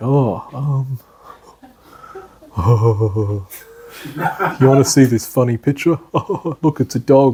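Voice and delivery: distracted, giggly, spacey voice. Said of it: "I'm like".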